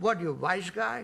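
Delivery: imitated Yiddish accent. Retelling what people in the Catskills asked: imitating a Yiddish accent. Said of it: "everybody spoke with a Yiddish accent".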